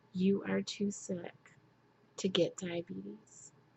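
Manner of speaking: imitated somber, solemn, grave delivery. Speaker quoting their doctor's serious warning to them, imitating a somber voice. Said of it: "in a very somber voice has said to me".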